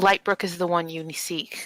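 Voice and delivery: hushed whispered voice. A game master voices a woman leaning forward to tell Rose: whispering. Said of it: "leans forward a little bit and whispers".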